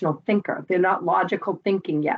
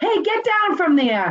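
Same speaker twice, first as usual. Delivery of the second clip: put-on shrill, very high teacher yell; 11 semitones higher, 4 dB louder than usual. Imitating teachers' inside voices in class: imitating a teacher yelling. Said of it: "and then you start to modulate and yell".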